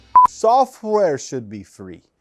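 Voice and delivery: horrible, bad, put-on Jamaican accent. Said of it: "That's a horrible Jamaican accent".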